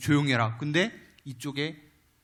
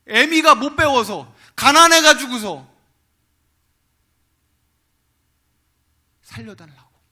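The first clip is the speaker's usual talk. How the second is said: put-on tearful crying voice, higher and louder; 9 semitones higher, 14 dB louder than usual. Retelling an old mother's plea to reporters for her son: imitating a mother crying while pleading. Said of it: "엄마가 막 울면서".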